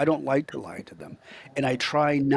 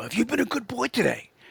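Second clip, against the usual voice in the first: jolly, creaky, pitched-up, slightly rough voice; 9 semitones higher than usual. Demonstrating how to talk to a child, in a jolly Santa voice. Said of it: "you gotta sound jolly".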